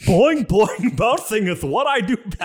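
lisping voice, high and slow. Voicing Tigger bouncing in a skit: Tigger voice with a lisp. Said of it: "he has a lisp".

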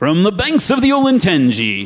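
big, loud, booming, swooping sportscaster voice. Asked for an announcer voice, doing a Keith Jackson announcer voice. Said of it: "an announcer voice. ... if anybody remembers Keith Jackson".

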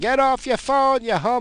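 shrill, very loud, high-pitched yelling. Retelling yelling at a driver on the phone: acting out own yelling. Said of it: "And I'm yelling".

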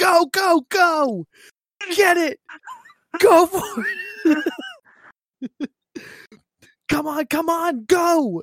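very high, very slow, drawn-out swooping shriek. Retelling how the game controller's speaker yelled at night: imitating a screaming controller speaker. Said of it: "my controller would start screaming".

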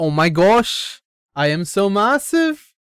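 slow, bad Australian attempt landing in Scottish accent. Quoting a bit the listeners may not have seen: accent that came out Scottish. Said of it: "why'd you make a Scottish accent?".

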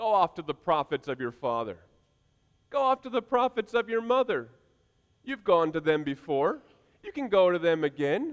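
put-on, mocking sarcastic tone. Retelling a prophet's reply to the king: imitating a sarcastic tone. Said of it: "rather sarcastically".

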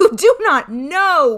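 terrible, very loud, drawn-out cry. Bluebeard confronts Fatima about the blood on the key; crying out in a terrible voice. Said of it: "cried Bluebeard in a terrible voice".

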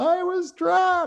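put-on very high, slow, drawn-out little girl scream.

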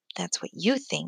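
muttered under the breath. Ruva answers a father's remark about giraffes, muttered under her breath. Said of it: "muttered Ruva under her breath".

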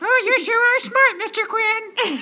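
very high, ditzy, airheaded, dim-witted sweet voice. Recalling reading a book aloud and doing a character's voice: Elaine voice. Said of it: "I had fun like doing her voice".

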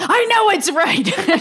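very high, emphatic, drawn-out yell. Recapping a scene where Gideon answers Hotch, retelling Gideon yelling. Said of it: "And then Gideon just yells".

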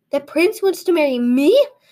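gasped out. Narrator voicing Flowerpot as a servant rushes her the news, gasping. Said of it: "she gasped".

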